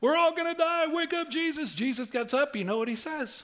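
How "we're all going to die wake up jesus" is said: high, panicked, freaking-out cry. Retelling the disciples in the storm: imitating people freaking out. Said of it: "They're freaking out".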